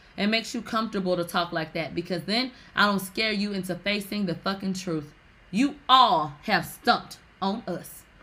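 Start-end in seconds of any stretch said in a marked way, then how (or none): none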